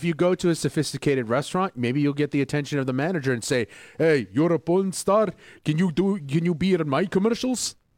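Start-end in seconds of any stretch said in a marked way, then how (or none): 4.0-7.7 heavy, thick put-on Greek accent. Acting out what a manager says at a restaurant: put-on heavy Greek accent. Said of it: "he had a heavy Greek accent".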